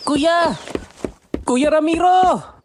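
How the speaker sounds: very high, shouted, yelling call. Calling from outside, running toward the others: shouting from outside. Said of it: "Bakit ka sumisigaw?".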